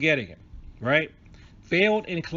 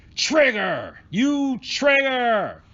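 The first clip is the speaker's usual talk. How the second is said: comic fake anger with high pitch swoops; 8 semitones higher, 4 dB louder than usual. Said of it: "in an angry vo-, in a voice".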